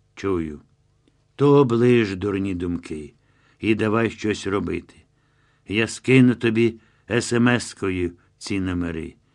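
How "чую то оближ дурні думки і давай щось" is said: plain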